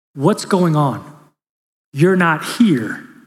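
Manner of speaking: gentle, tender, kind, concerned voice. Retelling what the wife used to ask: imitating someone speaking softly and kindly. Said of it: "my wife used to say this really softly, really kind".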